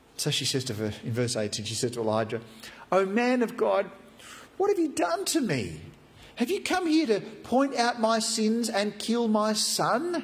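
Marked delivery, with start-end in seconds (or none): 2.9-10.3 very high, anguished crying voice. Retelling how a mother confronts Elijah over her son: acting out an anguished mother. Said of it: "You can hear in her voice her anguish".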